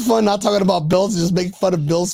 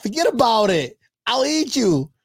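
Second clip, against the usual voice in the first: put-on Italian accent, laid on for fun, high-pitched; 5 semitones higher than usual. Joking about a video, imitating an italian accent. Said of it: "he got that Italian".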